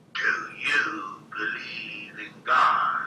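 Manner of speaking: insistent, demanding, very slowly drawn out. Retelling the little person asking again: imitating a demanding tone. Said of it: "it was more demanding".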